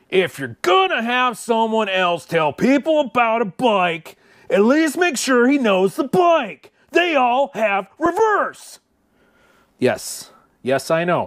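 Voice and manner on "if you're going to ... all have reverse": grand, theatrical, very high dramatic reading. Reading a listener's message aloud on air in a dramatic voice. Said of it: "I'm going to read this in my dramatic voice".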